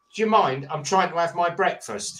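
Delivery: mock snubbing, rude, dismissive tone full of attitude. Retelling how a man spotted at breakfast answered a greeting, mimicking his attitude. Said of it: "his attitude was".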